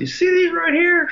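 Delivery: put-on high squeaky voice. Retelling what a man said to a struggling pitcher, imitating a high-pitched voice. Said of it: "his high-pitched voice".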